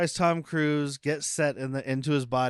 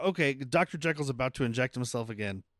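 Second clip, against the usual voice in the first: usual speaking voice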